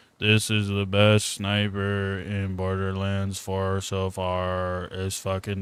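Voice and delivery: dead-tired, low, flat monotone, far drawn out. Speaker reenacting their own line from a video made while dead tired, flat monotone. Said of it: "I was very monotone".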